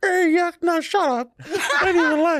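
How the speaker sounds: very high, gummy, toothless woman's voice. Retelling what the downstairs neighbor said back to the speaker, toothless neighbor impression. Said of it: "Did she have no teeth?".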